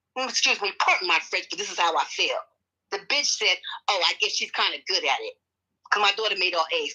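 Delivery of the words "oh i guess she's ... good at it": mock flippant, dismissive tone. Retelling what a teacher said at a report card conference: imitating a flippant remark. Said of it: "the way she said it flippantly".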